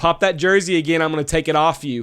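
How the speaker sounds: mock, loud, hollered heckling yell. Retelling yelling at a couple in the stands: retelling own yell. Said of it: "and I yelled".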